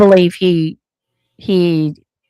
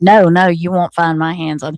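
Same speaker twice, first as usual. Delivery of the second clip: put-on adamant, firm tone. Retelling how an interviewee answered a question: imitating an adamant denial. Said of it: "he's very adamant".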